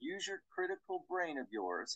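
patronizing, soft, superior. Speaker quotes a man from taken-down videos, mocking Jonathan Seller's condescension. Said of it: "It's so condescending the way he says that".

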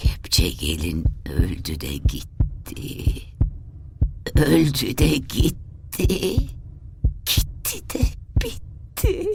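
strange wavering murmur. The aunt, smiling and crying at once, begins to murmur, strange wavering murmur. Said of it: "dalgalı bir sesle mırıldanmaya başladı".

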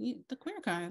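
mock, dry, sarcastic comeback. Retelling own reply to a question, sarcastic reply. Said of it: "I just got sarcastic".

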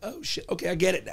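plain

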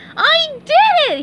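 gleeful, very high, loud happy cry. Reading a story, a character cries out as the money lands in his hands: cried happily. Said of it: "He cried happily".

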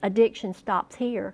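ordinary talk, nothing marked

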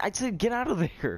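very high, exasperated, frustrated yelling. After a teammate is killed by grenades in a game, yelling in frustration. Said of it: "I told you to run".

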